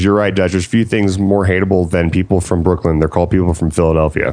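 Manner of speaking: ordinary talk, nothing marked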